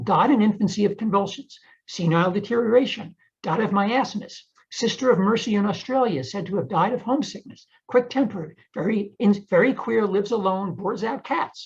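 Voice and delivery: ordinary talk, nothing marked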